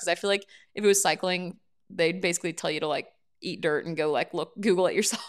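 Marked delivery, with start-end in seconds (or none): none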